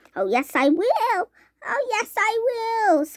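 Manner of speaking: tiny squeak, slow and rising in pitch. Reading aloud, Mike Teavee answers his mother's worry: tiny squeaky voice. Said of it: "squeaked the tiny voice".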